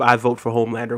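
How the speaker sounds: ordinary talk, nothing marked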